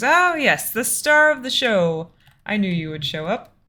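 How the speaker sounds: pleased, bright tone. Voicing Gorak greeting a player: pleased and brightening. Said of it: "his face, like, lightens up and he goes".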